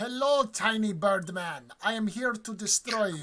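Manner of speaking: put-on Russian accent. Describing a game match, voicing Big Outsider landing next to Kordjoff: Russian accent. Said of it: "the big outsider has a Russian accent".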